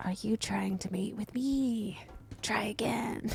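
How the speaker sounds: tiny, rough, creaky spider creature voice. Voicing a spider that looks back at the player: little spider voice. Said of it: "you hear its little spider l-, lips go".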